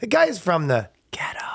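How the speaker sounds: high, voiced, confiding stage whisper. Showing how a word is supposedly allowed only if half-whispered: half-whispering. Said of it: "you just have to whisper it".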